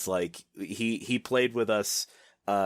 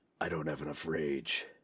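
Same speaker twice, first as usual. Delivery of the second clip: close, soft, hushed half-whisper; 4 semitones lower, 6 dB quieter than usual. Joking about a friend's future asmr roleplay video: put-on half-whisper in your ear. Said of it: "leans in and whispers in your ear".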